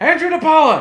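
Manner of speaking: very high, shrill, loud scream. Retelling shouting an answer at a show's long snapper question: imitating own past screaming. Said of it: "And I'm screaming".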